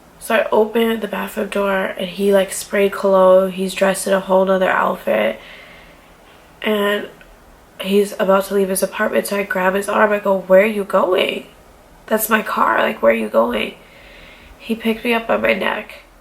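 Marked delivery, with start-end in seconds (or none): 10.4-13.7 tearful, acted-out crying voice. Recounting grabbing his arm as he leaves in her car, retelling weeping. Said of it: "I'm weeping and I'm weeping".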